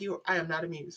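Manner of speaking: slow, deliberate dog character voice. Giving the dog a voice as it stares at the treats: voicing the dog. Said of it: "the look on his face is like".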